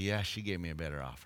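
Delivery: very quiet, very low, hushed confidential half-whisper. Telling a joke, the pastor hands back the money to the groom: half-whispering very quietly. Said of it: "whispered to him very quietly".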